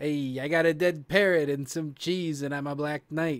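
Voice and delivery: imitated Brooklyn accent. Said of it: "the Monty Python guy's got that Brooklyn accent".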